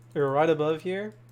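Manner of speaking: ordinary delivery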